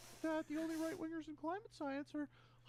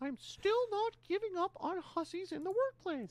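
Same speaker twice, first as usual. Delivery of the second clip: raised, high, squeaky cartoon-mouse-like put-on voice; 3 semitones higher, 8 dB louder than usual. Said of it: "this is way more Mickey than Kermit".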